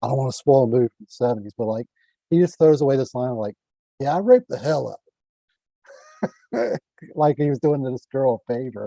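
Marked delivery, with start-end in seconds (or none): 4.0-6.8 put-on casual, tossed-off Brooklyn accent, pitched up. Recounting a throwaway line from a seventies movie, quoting the character in a Brooklyn accent. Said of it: "He had like this Brooklyn accent".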